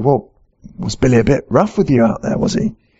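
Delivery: quiet, softly spoken delivery. Speaker retells a friend following a man who stormed off and asking quietly. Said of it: "said quietly".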